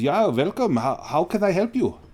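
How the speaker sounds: put-on butchered, laid-on German accent. Quoting a mustached man who speaks with a thick German dialect: bad thick German accent. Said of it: "I'm going to do my best to butcher this German accent".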